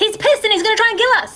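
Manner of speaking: very high-pitched shout. Shouting a warning while vanishing into the mist: shouting in character. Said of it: "just shout".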